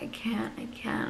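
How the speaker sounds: breathy, slow, tearful whisper, nearly crying. Recalling what she told her boyfriend during contractions, retelling near-tears pleading. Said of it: "I would like practically cry".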